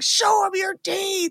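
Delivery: mock screaming, high and drawn-out. Retelling a movie scene where a dentist screams at his wife: imitating someone screaming.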